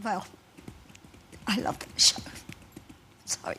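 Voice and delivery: choked up, voice catching with emotion. Answering a question about missing the show he left, getting emotional. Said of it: "I'm getting emotional now".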